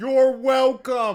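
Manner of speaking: loud, high-pitched, drawn-out yell.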